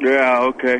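dejected, sad, very low voice. A caller on a radio show answers the hosts, sad and dejected. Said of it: "Bill, you sound sad".

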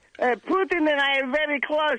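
dog voice with a bad Russian accent. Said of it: "Vernie, did he teach you".

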